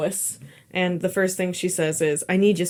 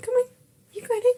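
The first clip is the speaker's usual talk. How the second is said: put-on very high, sweet, cute baby talk. Retelling a TV scene where Clark talks to a dog: imitating a cute dog voice. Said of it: "Clark talking to the dog in your cute dog voice".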